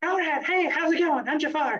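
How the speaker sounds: very high-voiced friendly tone. Speaker retells meeting a prince, imitating Jafar's high voice.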